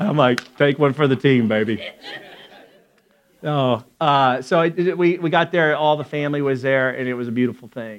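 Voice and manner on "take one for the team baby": ordinary delivery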